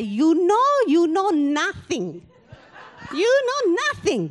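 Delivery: put-on slow, swooping Italian accent, know stretched out. Retelling how Mum told off a teenage sister: imitating mother's Italian accent. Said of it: "in her beautiful Italian accent".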